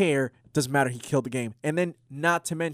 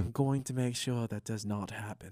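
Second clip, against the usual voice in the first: put-on very soft, low, hushed British accent; 4 semitones lower, 10 dB quieter than usual. Voicing William Regal's imagined reaction to the show, in a William Regal British accent. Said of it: "you got to say that in a British accent".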